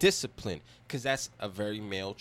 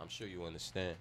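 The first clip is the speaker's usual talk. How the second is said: soft, low, calm rational tone. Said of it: "show that calm rationale".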